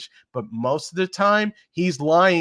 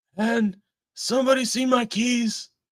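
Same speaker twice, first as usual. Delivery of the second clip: raspy voice with breaks between words; 8 semitones higher than usual. Trying a Joe Biden impression after describing it as raspy. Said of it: "that's as good as I can get".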